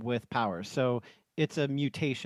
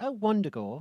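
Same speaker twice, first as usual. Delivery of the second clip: put-on British accent, pitched up; 8 semitones higher than usual. Showing how they said the place name: put-on British accent. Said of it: "like a British thing".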